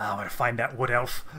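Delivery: quiet, low-key muttered aside. Game narrator voicing Brilwyn, overheard after a report: muttering. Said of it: "she mutters".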